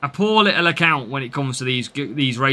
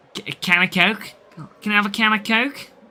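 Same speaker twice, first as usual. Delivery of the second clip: very poor put-on Scouse accent, raised pitch; 5 semitones higher than usual. During race commentary, the speaker tries a line in the worst Scouse accent. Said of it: "It's the worst Scouse accent you'll ever hear".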